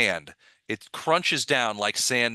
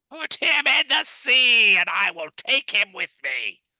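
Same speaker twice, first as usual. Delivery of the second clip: very high, shrill, loud screech; 11 semitones higher, 5 dB louder than usual. Storyteller voices a distant figure replying to those who brought him, high screechy voice. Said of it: "a high, screechy voice".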